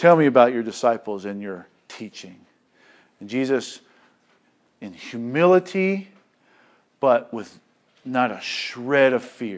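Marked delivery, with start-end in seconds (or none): 0.0-2.4 lofty, condescending, talking-down tone. Speaker acts out the high priest questioning Jesus, mock-condescending high priest. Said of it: "very condescendingly".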